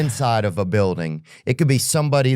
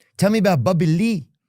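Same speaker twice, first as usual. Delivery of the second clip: laid-on, put-on Mexican accent, pitched up; 8 semitones higher than usual. Redoing the imitation of fans when asked: imitating fans' accent. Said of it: "you said no accent".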